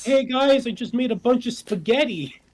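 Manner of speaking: very high, loud, energetic dad voice full of pep. Imitating a friend's dad offering food: imitating a dad with Ned Flanders energy. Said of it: "he gives a little bit of Ned Flanders energy".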